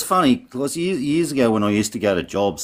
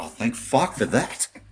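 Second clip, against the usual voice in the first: words breaking up through hard laughter; 4 dB quieter than usual. Retelling a mate's reply on the phone: imitating someone laughing hard while talking. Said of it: "pissing himself laughing and going".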